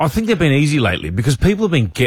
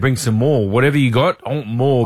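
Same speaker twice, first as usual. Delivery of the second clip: usual speaking voice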